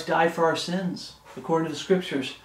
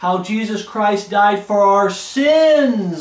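raised voice, louder and slower; 4 semitones higher, 6 dB louder than usual. Repeating a phrase so listeners will hear, with a raised voice. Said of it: "I'm raising my voice".

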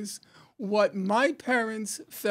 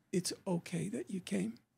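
quiet, soft, hushed half-whisper; 2 semitones lower, 10 dB quieter than usual. Retelling how a mother took a guest aside: imitating a half-whisper. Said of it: "just whispered".

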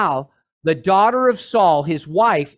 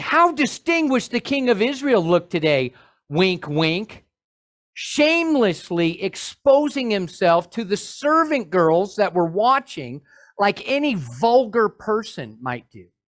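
ordinary talk, nothing marked

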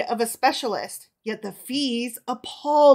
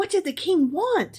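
eager, high, excited voice, bursting with curiosity; 8 semitones higher than usual. Her mate returns from the king and she questions him; excited question. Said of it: "she asked excitedly".

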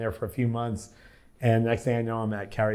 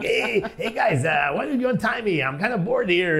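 put-on talking goat voice, much higher pitch; 10 semitones higher than usual. Retelling a popular skit's talking goat line, in a talking goat voice. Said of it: "Adam did the voice of the goat like".

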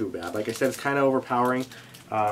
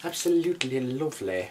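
horrible put-on British accent of sorts; 3 dB quieter than usual. Speaker comments on a camping item in a terrible british accent. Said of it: "My horrible, horrible accent. I think I will finish this whole thing in my terrible British accent".

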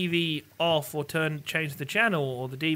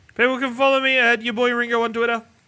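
rattled off at top speed, very loud; 7 semitones higher, 8 dB louder than usual. Wrapping up the show, giving his Twitter handle; very fast. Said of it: "said it so fast".

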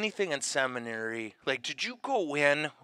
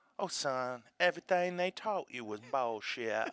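put-on soft, heavy, thick New Orleans accent; 5 dB quieter than usual. Retelling what Sister said when signing him up for philosophy classes, thick New Orleans accent. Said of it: "she had that thick New Orleans accent".

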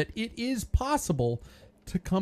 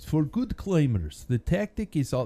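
put-on Russian accent on English. Reading a quiz line from a book in the author's voice: put-on Russian accent. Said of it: "No, that's Russian".

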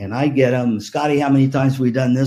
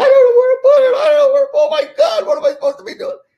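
mock panicked scream, much higher, louder; 6 dB louder than usual. Recounting a dad running around with a timpani, the speaker imitates him screaming in panic. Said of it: "he's screaming".

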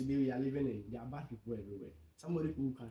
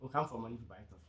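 ordinary talk

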